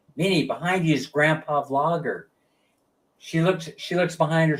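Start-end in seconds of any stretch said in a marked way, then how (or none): none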